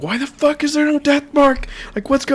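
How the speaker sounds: very high, appalled screaming outburst. Retelling a moment of discovering a missing ability: imitating own screaming.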